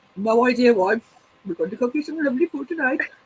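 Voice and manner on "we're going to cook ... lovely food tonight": speaking in a put-on Indian accent. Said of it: "Robert does it all the time when he's cooking".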